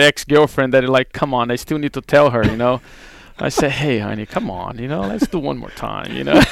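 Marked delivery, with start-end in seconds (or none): 3.7-6.3 put-on sexy, seductive, sweet-talking voice. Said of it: "like that sexy voice".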